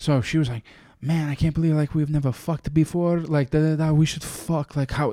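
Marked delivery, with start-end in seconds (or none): 1.0-5.1 put-on thick Russian accent, higher pitch. Retelling a woman's proposition: imitating a thick Russian accent. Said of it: "thick Russian accent".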